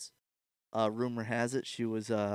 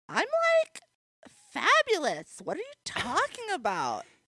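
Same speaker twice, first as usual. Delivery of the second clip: weird, very high, loud, swooping sing-song put-on voice; 5 dB louder than usual. A guest slips into a weird voice while the co-host opens the episode: weird put-on voice. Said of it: "Eli's on like this weird voice thing right now".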